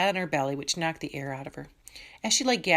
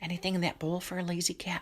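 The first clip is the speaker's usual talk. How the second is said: hushed, breathy whisper; 2 semitones higher, 5 dB quieter than usual. Reading a story, a character whispers a question about food: whispering. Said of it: "whispered Sophia".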